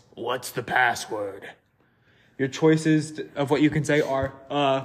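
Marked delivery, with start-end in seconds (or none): 0.2-1.5 rough, gruff voice with a hard edge. A game narrator voices the figure behind the door to the player, gruff voice. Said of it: "You hear a gruff voice".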